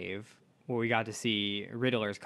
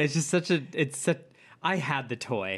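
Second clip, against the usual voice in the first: words broken up by laughing; 4 semitones higher than usual. Answering why they are laughing, laughing while talking. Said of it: "That's why I'm laughing".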